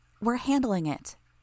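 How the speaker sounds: curt, irritated snap. Reading a story where Lisa cuts off the doctor: snapping at someone. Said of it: "Lisa snapped at him".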